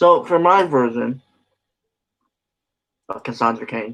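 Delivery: chewing while speaking, mouth full of food. Chatting about the Oscars with a co-host, talking while eating. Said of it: "sorry, eating a cookie".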